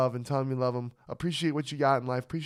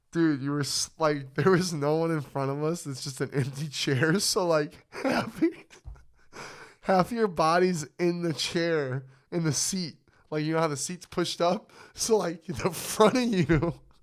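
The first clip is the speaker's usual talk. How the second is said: words breaking up with hard laughter; 3 semitones higher than usual. Describing to the other speaker how they were slumped in a seat: laughing hard while talking. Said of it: "I'm sorry I'm laughing so hard".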